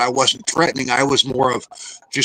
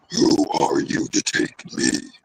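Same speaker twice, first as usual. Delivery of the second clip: slow, deep, possessed-sounding demonic voice; 11 semitones lower than usual. Retelling what a voice said while under hypnosis: imitating a deeper, demonic voice. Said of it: "I can mimic the voice".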